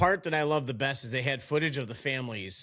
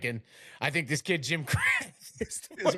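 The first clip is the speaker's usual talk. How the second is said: all fired up, excited, worked-up coach voice. Retelling a coach's TV interview, imitating Herb Brooks getting excited. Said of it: "And he's got all excited".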